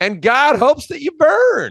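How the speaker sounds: very high, loud, swooping put-on Southern accent. Quoting the listener's soundbite from the upcoming trailer, in a Southern accent. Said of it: "That's a great Southern accent".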